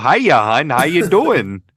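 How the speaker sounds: put-on swooping Minnesota accent. Imitating a woman from another speaker's story, Fargo accent. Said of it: "talked like she was straight out of Fargo".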